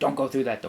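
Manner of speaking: usual speaking voice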